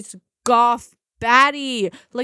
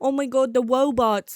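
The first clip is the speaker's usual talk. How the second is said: put-on lisping voice. Describing a movie character who can't say R words, imitating Zach's lisp. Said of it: "he's like talking like".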